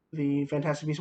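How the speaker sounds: normal talking voice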